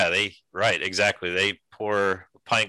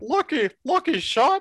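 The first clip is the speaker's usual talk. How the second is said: very high, odd, weird-sounding voice. Imitating the other guy with the weird-sounding voice: high-pitched weird voice. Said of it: "it's like a high-pitched Barney Fife voice".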